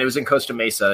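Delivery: ordinary talk, nothing marked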